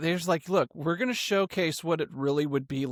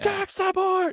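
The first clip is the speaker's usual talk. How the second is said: frantic scream, pitched higher; 3 dB louder than usual. Retelling a movie blooper of running down a hallway: imitating Tom Cruise screaming. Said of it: "he's screaming down the hallway".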